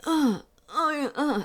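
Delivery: rhythmic male moans. Retelling the start of a movie, imitating a man moaning. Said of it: "you hear a man moaning".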